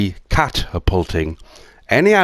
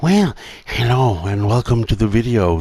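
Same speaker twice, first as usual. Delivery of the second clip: put-on TV-presenter voice; 5 semitones higher than usual. Setting up a live stream, testing a greeting in a put-on presenter's voice. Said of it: "Better start using my presenter's voice".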